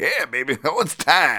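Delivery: big, swooping comic supervillain voice. Describing what he hears whenever he sees a certain fighter; Juggernaut voice. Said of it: "I just hear like the juggernaut voice".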